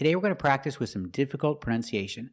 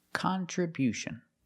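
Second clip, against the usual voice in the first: "contribution" with first and third syllables stressed; 5 semitones higher, 3 dB quieter than usual. Demonstrating how to pronounce the word: stress first and third syllables of contribution. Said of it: "Stress the first and third syllable".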